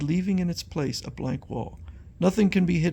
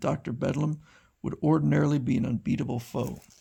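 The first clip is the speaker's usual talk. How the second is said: ordinary delivery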